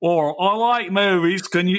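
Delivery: casual put-on Australian accent. Voicing an imagined listener in australia: australian accent. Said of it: "your Australian accent is better".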